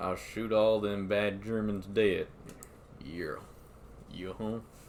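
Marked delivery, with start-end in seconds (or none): 0.0-2.3 slow puppet cowboy southern drawl. Inventing a voice for the puppet Six Shooter; southern drawl. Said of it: "southern drawl".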